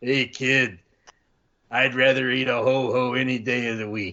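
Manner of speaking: raspy, roughened voice, slow and drawn out. Retelling what a road trip companion said: imitating Harley's raspy voice. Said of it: "Harley said to me with that rasp in his voice".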